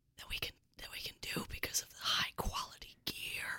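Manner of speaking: faint, very soft, voiceless whisper.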